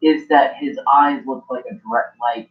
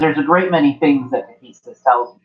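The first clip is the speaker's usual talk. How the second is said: ordinary delivery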